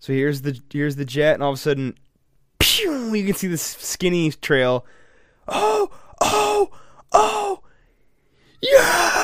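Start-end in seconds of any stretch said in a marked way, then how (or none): 5.5-9.2 very high, very slow, drawn-out excited whooping cheer. Describing people in a video seeing a trail in the sky: imitating people cheering. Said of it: "They're all cheering".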